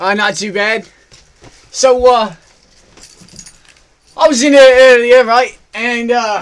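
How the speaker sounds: very loud put-on Australian accent, shifting around. Caller on the phone to the computer guy, in a put-on Australian accent. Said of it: "Is he really talking in an Australian? The computer guy's talking in an Australian accent? ... If you noticed in that, while I was talking to him, I changed my accent like 6 times".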